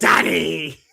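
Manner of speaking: daddy stressed heavily, leaned on. Retelling how he delivered the line at the end of a promo, stressing 'daddy'. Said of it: "when he emphasized the word".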